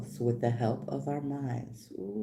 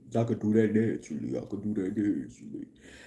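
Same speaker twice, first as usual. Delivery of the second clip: voice dropped low, deep and bassy; 4 semitones lower, 4 dB louder than usual. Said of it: "I could add some bass to it".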